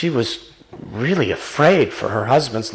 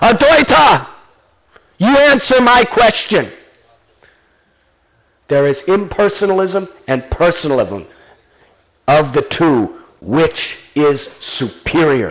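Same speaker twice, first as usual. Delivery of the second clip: booming, thunderous, loud voice; 3 semitones higher, 5 dB louder than usual. In a retold story, someone calls out a challenging question, loud thunderous voice. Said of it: "He called out in a loud, thunderous voice".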